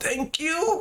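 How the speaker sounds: barely audible, very high, feeble, faint voice. A man who cannot get up thanks the listener, in a very weak voice. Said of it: "very weakly you can just hear him say".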